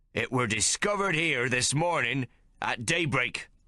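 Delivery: pointed, blaming, accusing statement. Reading a story aloud, a character presents the found axe: accusingly. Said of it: "he says accusingly".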